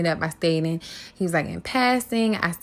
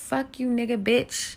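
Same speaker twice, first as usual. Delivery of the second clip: mock light, high, mild screamed yell; 6 semitones higher than usual. Retelling a guest screaming while being made to leave: imitating someone screaming. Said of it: "he screams".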